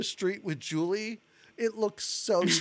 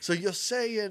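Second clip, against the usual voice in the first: imitated Southern accent. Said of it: "he also has a southern accent".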